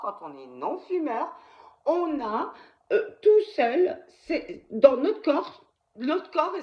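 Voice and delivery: halting, stumbling speech. Speaker explains a topic they are still learning, stumbling over words. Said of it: "je bafouille hein".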